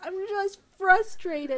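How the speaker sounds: put-on very high, loud, tearful, sobbing child voice. Retelling how a child answers when upset: imitating a sobbing child.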